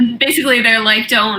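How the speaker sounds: ordinary delivery, nothing marked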